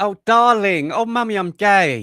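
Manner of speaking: very slow, high, loud, derisive mocking drawl. Mocking a man who filmed his coming out for social media: mocking imitation. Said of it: "I could mock him".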